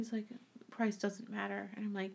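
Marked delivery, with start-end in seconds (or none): 0.7-1.7 put-on slow, low, sad voice, quieter. Retelling a TV scene about shoe shopping: imitating slow, low, sad talk. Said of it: "Why are you talking so slow and low and just sad?".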